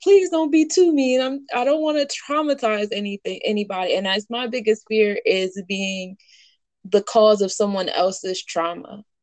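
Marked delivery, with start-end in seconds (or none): 0.0-1.5 begging, pleading voice pitched very high. Retelling a conversation with a mama who has no time for it, retelling a plea. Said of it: "I'm over here pleading".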